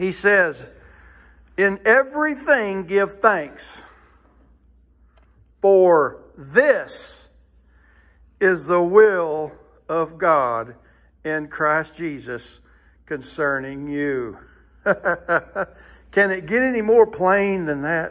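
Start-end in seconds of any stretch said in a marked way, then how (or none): 1.6-14.4 very slow read-aloud delivery. A preacher reads a Bible verse aloud to the congregation: very slow reading. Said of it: "Let's read it very slowly".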